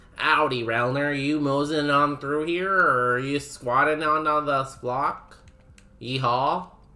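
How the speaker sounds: put-on Texas accent, drawling. Greeting a chat member named Relner in a put-on cowboy way: put-on Texas accent. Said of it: "That's my best Texas".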